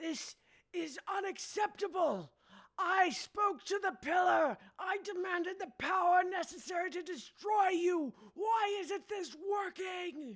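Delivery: frothing rage, shrill, booming, very loud high shouting. Game master voicing a character shouting at all the players, furious shouting. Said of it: "just shouting at all of you".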